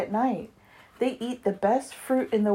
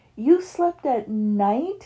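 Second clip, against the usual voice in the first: gasped, higher; 3 semitones higher than usual. Hearing Stella Luna's story, another bat in the crowd questions her, gasped. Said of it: "gasped another".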